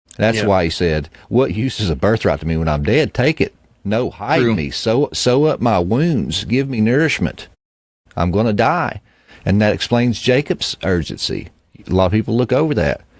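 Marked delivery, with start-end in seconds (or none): none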